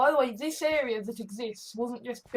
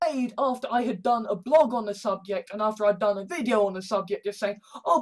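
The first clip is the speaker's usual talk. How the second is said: plain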